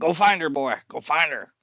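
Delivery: loud, high-pitched yelling. As a dwarf character helping another dwarf, yelling at a dog. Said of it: "he's gonna yell at Stop".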